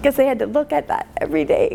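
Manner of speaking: choked up, voice breaking with tears. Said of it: "I'm very emotional".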